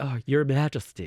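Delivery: poor, clumsy put-on American accent. Retelling rude Americans speaking to the Queen Mother at dinner: bad American accent. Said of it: "bad accent, we get the point".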